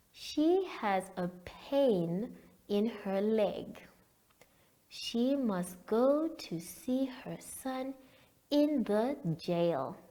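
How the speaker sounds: reading very slowly. Reading a passage aloud so learners can underline words: reading very slowly. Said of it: "I am going to read very slowly".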